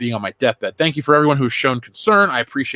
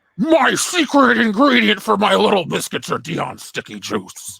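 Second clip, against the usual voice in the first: raspy, rough put-on voice, high and swooping; 7 semitones higher than usual. Reading another viewer message as the horse: Richard Nixon voice. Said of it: "Easy there, Tricky Dick".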